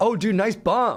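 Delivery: put-on, overly friendly, passive-aggressive, high and slow. Retelling what they said afterwards to an authoritative guy: retelling own passive-aggressive line. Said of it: "I was being like passive aggressive towards him".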